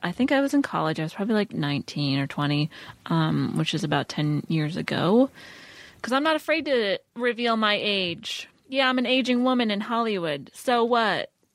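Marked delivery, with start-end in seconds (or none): 8.7-11.3 sudden, high, half-yelled mild outburst. Joking about revealing age to the other speakers: yelling. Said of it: "I don't know why I started yelling".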